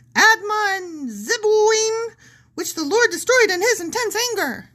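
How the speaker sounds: very high, squeaky cartoon mouse voice, "Admon" drawn out. Reading a passage aloud to the other speaker, doing a Mickey voice. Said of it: "you've got to stop with the Mickey voice".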